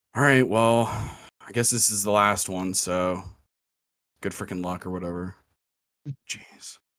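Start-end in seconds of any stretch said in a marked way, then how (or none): 0.2-4.9 mopey, gloomy emo voice. Voicing the employee as players enter the fourth room: emo employee voice. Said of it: "you hear the emo employee's voice say".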